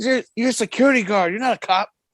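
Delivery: heated, angry rant. Retelling how a man reacted to a security guard: imitating someone going off. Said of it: "he went off".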